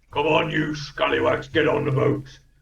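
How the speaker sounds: gruff put-on orc voice, rough and creaky. Narrating a scene, the speaker voices an orc character: orc voice. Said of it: "the orc is like".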